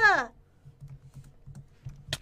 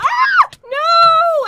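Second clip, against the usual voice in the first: high, loud scream. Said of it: "I'm sorry for screaming".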